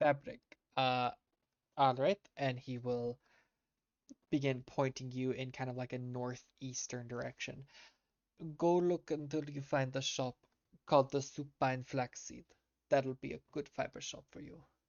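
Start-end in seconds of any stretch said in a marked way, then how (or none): 8.6-14.6 put-on Russian-sounding accent. Voicing a character pointing the listener toward a fiber shop, in a Russian-sounding accent. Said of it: "is this a Russian accent?".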